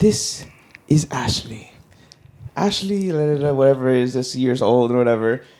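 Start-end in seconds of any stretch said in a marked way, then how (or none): 0.0-3.5 put-on British nature-documentary narrator accent. Describing a documentary, imitating its soft English documentary narrator. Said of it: "documentarian Englishman softly comes over the thing and he goes".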